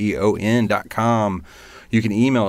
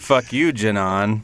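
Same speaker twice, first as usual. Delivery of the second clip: put-on sarcastic delivery. Retelling how the other speaker's thank-you line came across: imitating a sarcastic tone. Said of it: "and sarcastic".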